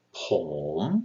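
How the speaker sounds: Pom with dipping first then rising tone. Teaching a rising tone, say it with dipping then rising tone on Pom. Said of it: "Pom is rising. So you're going to want to uh, start at your regular voice, go down a little bit, and then come up".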